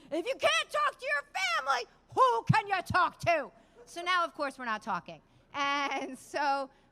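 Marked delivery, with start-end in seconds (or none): 0.1-3.5 shrill bellow at the top of the lungs. Told to be quiet at the TSA line, retelling Vinny's reply: retelling his shout at full volume. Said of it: "as loud as possible".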